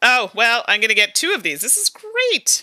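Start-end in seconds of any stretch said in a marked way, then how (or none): 1.6-2.6 bright fake cheer, very high cheery chirp. Taking cards in a game, not meaning it, very cheery tone. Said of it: "I'm saying that in a very cheery tone".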